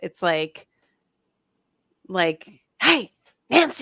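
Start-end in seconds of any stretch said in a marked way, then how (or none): 2.8-3.8 high, eerie, creepy scary-movie voice. Describing a character's voice, the speaker demonstrates it: higher-pitched eerie voice. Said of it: "It's like it's higher pitched".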